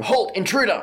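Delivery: high, loud, shouted yell. Game master describes a human guard pointing an arrow at the players: yelling a warning. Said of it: "one human yelling".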